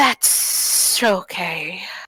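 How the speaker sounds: breathy, whispered, hissing snake voice. A snake on the table replies to the group, in a hissing snake voice. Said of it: "the snake hisses and speaks it common".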